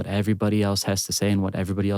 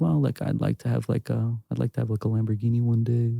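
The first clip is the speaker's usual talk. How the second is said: put-on shy, mock-shy tone; 2 semitones higher than usual. Giving advice, acting out how not to answer a question: imitating a shy answer. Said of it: "Don't be shy... say that with your chest".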